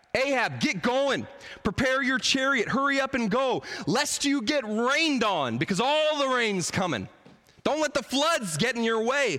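mock high, full-throated screaming. Retelling the story, the speaker acts out Elijah screaming at Ahab. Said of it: "Elijah screams at Ahab".

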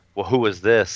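ordinary delivery

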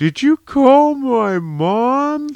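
put-on cackle while talking. Retelling a phone call with the stepson cackling in the background, imitating a cackling voice. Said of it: "cackling and go".

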